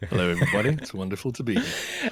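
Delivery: sweet, dulcet, swooping broadcaster voice. Asked by the host to greet the listeners, the guest answers in a dulcet radio voice. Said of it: "in your most beautiful dulcet radio voice".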